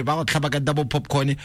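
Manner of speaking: ordinary talk, nothing marked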